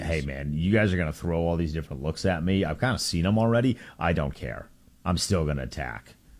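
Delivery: plain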